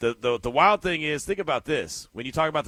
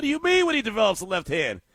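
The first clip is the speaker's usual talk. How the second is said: mock hair-pulling, fed-up, exasperated rant, high-pitched; 7 semitones higher than usual. Recalling a draft announcer's comment, acting out a mock exasperated outburst. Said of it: "I used to pull my hair out like".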